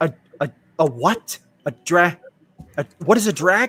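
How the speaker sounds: shocked, stunned, stammering voice. Voicing a character who just learned something startling: shocked character voice. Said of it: "She sounds legitimately, like, shocked".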